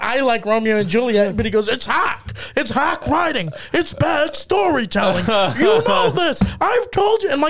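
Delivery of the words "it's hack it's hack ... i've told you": put-on drunken, ranting yell, high and rising pitch. Quoting a drunk man who kept yelling at them, retelling a drunk man's yelling. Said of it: "this guy's hammered just yelling".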